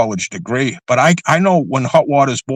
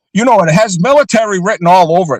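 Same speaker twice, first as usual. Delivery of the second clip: raised, pitched-up voice full of disbelief; 6 semitones higher, 4 dB louder than usual. Explaining a connection to another speaker, with a raised voice. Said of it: "Sorry for raising my voice".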